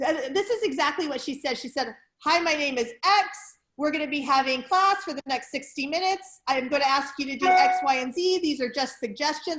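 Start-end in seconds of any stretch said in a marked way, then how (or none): 2.2-9.6 loud, barked, militant announcement delivery. Retelling exactly what a class instructor said, imitating her militant barking. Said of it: "she sort of like is barking the whole time".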